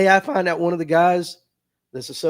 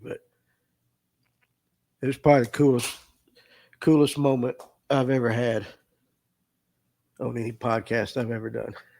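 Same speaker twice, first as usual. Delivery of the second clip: choked-up, tearful voice catching through tears; 6 semitones lower, 4 dB quieter than usual. Telling of the coolest moment on any podcast, tearful, choked up. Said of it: "I know I'm tearing up like a baby".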